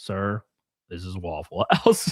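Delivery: put-on low, slow, fed-up, annoyed voice. Retelling being answered by the waitress, imitating a deadpan annoyed waitress. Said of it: "deadpan stare".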